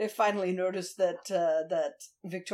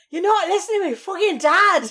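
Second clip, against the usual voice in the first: put-on very high, very loud, shrill yell, Scottish child voice; 12 semitones higher, 11 dB louder than usual. Imagining a sweary version of Olivia yelling at her dad: sweary Scottish Olivia voice. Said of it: "I wanna see sweary Scottish Olivia now".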